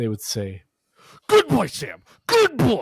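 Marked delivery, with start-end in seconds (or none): 1.3-2.8 mock, very high, shrill, loud, savagely aggressive bark. Speaker retells how people spoke to their uncle, mock super-aggressive. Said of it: "they'd say good super aggressively".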